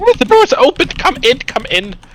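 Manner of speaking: put-on very high old woman voice. Voicing someone answering a knock at a hut door: older woman voice. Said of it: "you hear the voice of an older woman".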